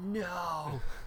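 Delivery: high, dismayed tone.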